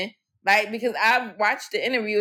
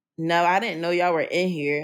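mock snippy attitude, much lower pitch; 4 semitones lower than usual. Speaker retells what she said on finding them in the room, mimicking an attitude. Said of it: "with an attitude".

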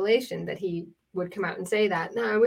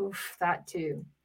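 put-on soft, rueful, regretful, reluctant tone; 2 semitones lower, 9 dB quieter than usual. Retelling how a speaker slipped while discussing an invasion, mimicking his great regret. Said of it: "the way that he said it was like with great regret".

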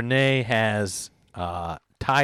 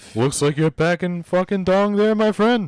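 high-pitched cartoon bear character voice; 8 semitones higher, 4 dB louder than usual. Imagining a cartoon bear talking: Yogi Bear voice. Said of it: "I think of Yogi Bear".

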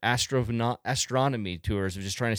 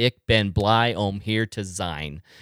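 very slow Dutch with a heavy American accent; 3 semitones lower, 3 dB louder than usual. Explaining how missionaries are spotted, a speaker says a dutch phrase in an americanized dutch accent. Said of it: "you would say it very Americanized".

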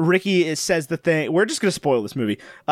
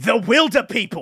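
weary, exasperated, pitched-up delivery; 5 semitones higher than usual. Retelling a scene where Heck answers a guy's question, Heck's exasperated reply, retold. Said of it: "As if it's the most obvious thing in the world".

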